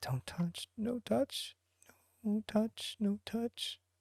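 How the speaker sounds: very high, very soft mumbling under the breath. Rezik sits near an open barrel as others come down, muttering under his breath. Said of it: "that kind of under his breath muttering".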